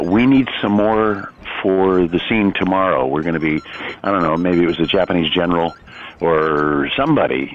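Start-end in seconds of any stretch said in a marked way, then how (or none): none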